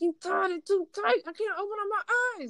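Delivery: talking through clenched teeth. Retelling telling her sister the blindfold was too tight, talking through teeth. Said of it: "I'm talking through my teeth at this time".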